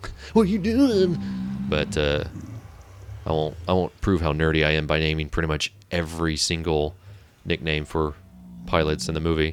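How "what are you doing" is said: high, panicky, freaking-out voice. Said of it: "He's like".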